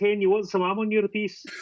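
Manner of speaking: woman's voice, pitched high. Retelling what a woman asked the speaker, imitating the woman's voice. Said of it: "That was pretty good".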